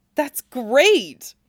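enthusiastic, bright and high. Narrator reading Cloud answering Tifa's news, enthusiastic. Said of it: "he said enthusiastically".

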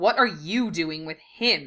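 contemptuous, sneering tone. Narrator reads a Slytherin questioning two others about their companion, sneering. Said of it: "Knott sneered".

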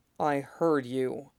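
low, quiet, close voice. Right after a kiss, a man answers the other man's question in a low voice. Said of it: "Mustang said in a low voice".

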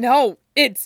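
forced, pained words. Stilinski, doubled over in pain, answers the question about his chest, choking the words out. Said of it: "Stilinski manages to choke the words out".

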